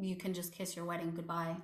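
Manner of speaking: ordinary talk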